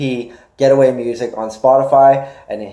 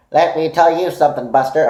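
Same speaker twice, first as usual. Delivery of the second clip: put-on voice of a rambling old-timer; 4 semitones higher than usual. Imagining rambling to future generations about it: rambling put-on voice. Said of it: "I'm stopping doing that voice".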